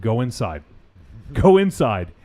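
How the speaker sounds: very calm, cool, composed and even. Retelling a movie scene, a man speaking to his wife: imitating a very calm voice. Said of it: "very calmly".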